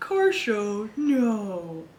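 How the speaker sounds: very slow, dry, swooping sarcastic drawl. Reading a comic character's reply aloud: sarcastic reading. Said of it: "Why does that sound sarcastic?".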